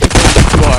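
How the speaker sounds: said out loud.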